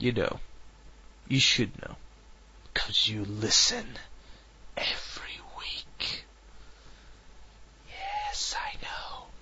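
hushed whisper, very quiet. Radio host signing off the show to regular listeners, whispering. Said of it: "Why am I whispering?".

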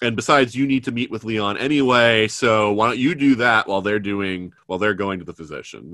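normal talking voice

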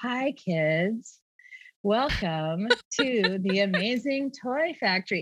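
put-on very slow, cheery kids' TV host voice. A mom retelling her toy-factory bit, Blue's Clues host voice. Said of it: "I'm going to talk like they do on Blue's Clues".

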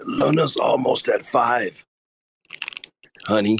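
whispered speech. Playing a husband sneaking up on his cooking wife: whispering to a wife. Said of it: "You have to whisper".

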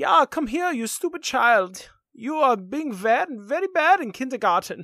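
exaggerated put-on German accent. Scolding a child in a bad German accent. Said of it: "I could do it in a bad German accent".

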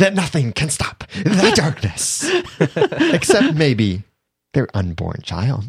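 high, swooping put-on villain voice. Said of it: "I was trying to imitate him".

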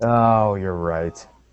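low, let-down, disappointed tone. Conceding that a co-host is right about an actor's role, disappointed. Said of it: "You sound so disappointed".

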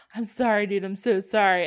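loud, slow speech through hysterical laughter. Retelling the other speaker's apology: imitating hysterical laughing while talking. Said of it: "you're laughing hysterically and being like".

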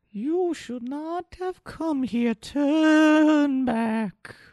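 put-on very high, gentle, kindly little-old-lady voice. The game master voices a fallen statue warning the heroes, kindly old grandmother voice. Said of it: "a voice that sounds like a kindly old grandmother".

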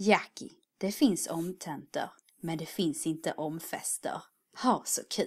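put-on Skåne accent. Speaker quotes a girl from Skåne who works for them, imitating a Skåne dialect. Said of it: "så här låter en skåning ungefär".

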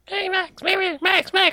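tiny, squeaky, very high-pitched mouse voice. Recapping a film scene where a mouse talks to Max, in a squeaky mouse voice. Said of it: "starts hearing squeaky voice like".

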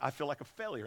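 put-on bawling. Retelling a pastor's call about his dwindling church, imitating someone bawling. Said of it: "he's just bawling on the phone".

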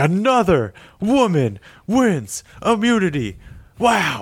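very slow, widely swooping host announcer voice. Quoting the host on the latest winner, in a Jeff Probst impression. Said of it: "He's like".

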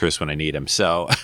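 ordinary delivery

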